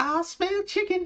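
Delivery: voice squeaked way up high, done badly. Joking about Mickey and Minnie invading homes, doing a terrible Mickey Mouse impression. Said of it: "It's a terrible Mickey impression".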